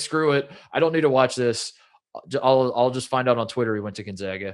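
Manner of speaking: ordinary talk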